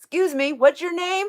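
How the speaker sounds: polite but loud, very high New York Italian bellow. Imitating an uncle getting a waitress's attention at a restaurant, retold Uncle Tony bellow. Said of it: "but he bellows it, just a very New York Italian way".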